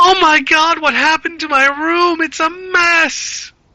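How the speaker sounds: shrill, very high voice, mess drawn out. Narrating a game, voicing a woman finding her room a mess: shrill voice. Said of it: "You just hear the shrill voice going".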